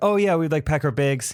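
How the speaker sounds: put-on casual, chatty Canadian accent. Retelling a Zoom call with a Canadian: Julie Nolke's Canadian accent. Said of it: "talk in this accent".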